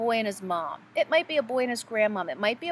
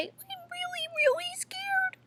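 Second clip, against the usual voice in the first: put-on babyish voice, very high baby talk; 3 dB quieter than usual. Explaining which voice to avoid when saying you're scared, demonstrating baby talk. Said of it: "We wouldn't use baby talk".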